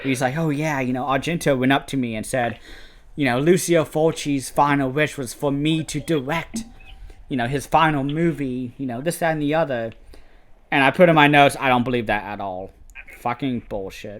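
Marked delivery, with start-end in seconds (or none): none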